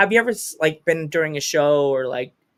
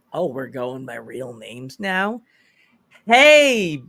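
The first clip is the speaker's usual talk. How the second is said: swooping sing-song pitch, hey stretched long. Retelling own reply to a wrestler, Steve Urkel voice. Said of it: "like Steve Urkel".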